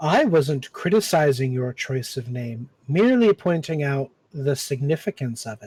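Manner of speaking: low, snakelike voice. A serpent hiding inside a body replies to a character: low serpent voice. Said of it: "And then you see just the little pinpricks of two little eyes within the cavity of this. / I guess my voice was too low for the mic to pick up. You hear a low".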